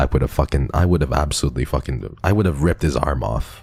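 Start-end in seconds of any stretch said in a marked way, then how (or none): none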